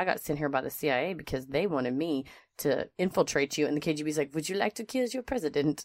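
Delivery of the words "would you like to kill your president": heavy, laid-on, put-on French accent. Joking through a spy scenario, voicing the KGB's offer in a very French KGB accent. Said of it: "That was a very French KGB accent".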